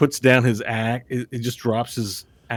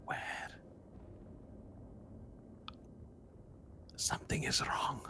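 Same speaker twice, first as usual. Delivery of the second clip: hushed, breathy whisper, barely voiced; 2 semitones higher, 21 dB quieter than usual. Voicing a character who warns a player something is wrong: whispering. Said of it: "Then he whispers to you".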